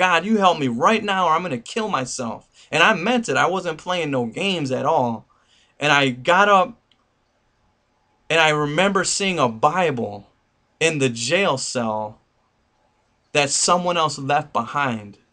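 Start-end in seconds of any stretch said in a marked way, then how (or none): 0.0-2.5 acted, tearful pleading through crying. Retelling a prayer said on a jail cell floor: reenacting a crying prayer. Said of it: "and I'm crying on the floor".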